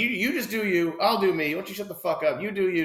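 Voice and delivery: high, heated yelling. Retelling a woman shouting at someone who shushed her: imitating someone yelling. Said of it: "Starts yelling at her".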